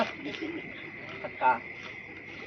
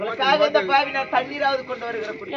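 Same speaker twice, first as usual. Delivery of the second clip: plain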